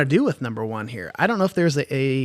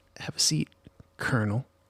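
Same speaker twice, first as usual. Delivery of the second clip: mock muttering under breath, lower and quieter; 3 semitones lower, 9 dB quieter than usual. Retelling a courtroom movie scene where a character talks to the judge: imitating muttering under breath. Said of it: "kind of under his breath".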